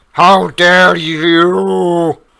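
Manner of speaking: very loud, high scream, "you" long and stretched. Voicing a doppelganger after the drow stops struggling: screaming. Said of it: "the doppelganger screams".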